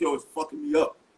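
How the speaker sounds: put-on Harlem street-style accent. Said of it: "he was on some Harlem street shit".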